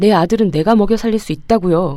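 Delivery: ordinary delivery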